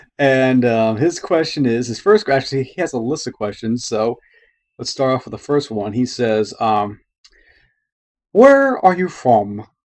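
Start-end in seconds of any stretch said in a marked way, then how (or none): 8.3-9.6 put-on half-hearted, failed Irish accent, pitched up. Reading a listener's question from ireland, in an attempted irish accent. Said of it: "That's my trying to do an Irish accent".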